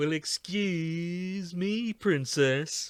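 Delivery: put-on obnoxious, high, sketchy Brooklyn accent, stretched out. Requesting the nineties TV series voice, quoting its line in Link's sketchy Brooklyn accent. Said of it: "the sketchy Brooklyn accent that the nineties T V series had".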